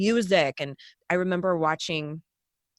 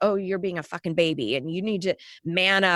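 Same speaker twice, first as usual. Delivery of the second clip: mocking, scornful, taunting tone. Retelling guards ridiculing crying kids: imitating guards ridiculing someone. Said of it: "the guards razzing them and being like".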